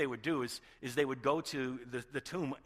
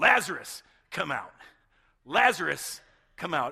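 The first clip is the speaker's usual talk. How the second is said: re-enacted shout, louder, much slower; 2 semitones higher, 10 dB louder than usual. Acting out what he said in a story being told: retelling a loud shout. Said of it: "He shouts his".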